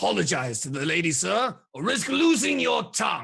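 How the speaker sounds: slow, drawn-out, rising, intimidating tone. Voicing a character confronting a man for a lady: projecting voice loudly to intimidate. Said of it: "he projects his voice enough".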